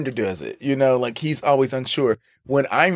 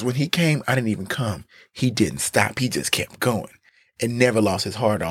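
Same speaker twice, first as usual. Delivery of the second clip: put-on sexy voice, lower pitch; 3 semitones lower than usual. Retelling Ben's detailed answer: trying for Ben's sexy voice. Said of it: "I don't have no sexy voice, but I was trying to be".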